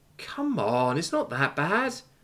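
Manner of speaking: small, meek voice, slow, trailing away. After a crewmate's warning about a dangerous weapon, she answers, trailing off, meek. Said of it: "suddenly becoming meek".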